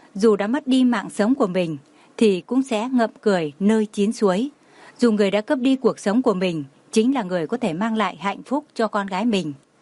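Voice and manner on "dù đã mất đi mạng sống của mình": ordinary delivery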